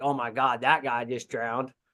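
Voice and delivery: ordinary delivery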